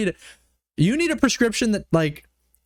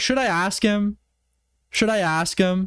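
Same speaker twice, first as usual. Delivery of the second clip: ordinary talk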